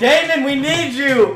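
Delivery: very loud, very high, drawn-out yell. Acting out a character calling to an ally: yelling for help. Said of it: "I'm yelling".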